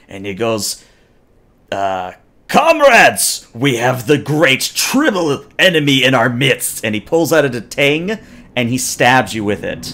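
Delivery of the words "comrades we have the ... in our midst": guttural, growling snarl. Voicing a Klingon warrior who catches a player: guttural growling snarl. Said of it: "he growls a very guttural sort of snarl at you".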